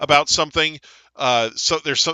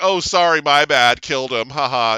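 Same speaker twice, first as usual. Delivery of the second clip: mock offhand, flippant, goading taunting tone; 4 dB louder than usual. Retelling how a character provokes another over killing his friends: imitating a taunting character. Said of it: "she's trying to get a rise out of him".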